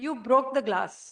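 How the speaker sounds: reproachful, accusing tone. Showing listeners how tone of voice changes meaning, in an accusing tone. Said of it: "this change in our tone of voice".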